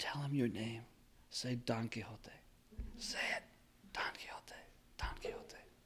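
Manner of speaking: very soft, hushed, repeated whisper. Retelling how an engineer in the audience whispered to the character: imitating a whisper. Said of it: "he speaks a whisper".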